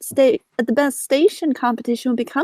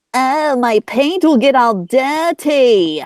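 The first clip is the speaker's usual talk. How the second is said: very slow, teasing voice; 4 dB louder than usual. Teasingly impersonating James as a joke: James impression. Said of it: "I impersonated him like this".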